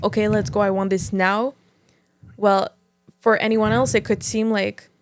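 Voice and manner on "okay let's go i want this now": mock rough, intense, forceful voice. Acting out how red people talk: imitating a rough, intense demand. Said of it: "rough and intense".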